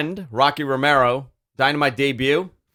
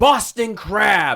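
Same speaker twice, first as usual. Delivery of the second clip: put-on yelling, high-pitched and screamed; 6 semitones higher than usual. Retelling how a wrestler screamed a hold's name: imitating someone screaming. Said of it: "And he screams".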